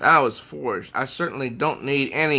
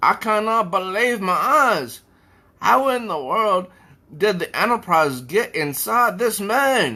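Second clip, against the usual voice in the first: high-pitched, baffled, bewildered character voice; 6 semitones higher than usual. Narrating a confused character's reaction to the scene, in a Scotty voice. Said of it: "I'm trying to do his voice".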